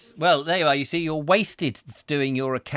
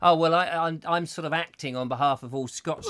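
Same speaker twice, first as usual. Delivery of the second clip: usual speaking voice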